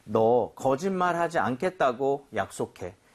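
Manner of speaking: plain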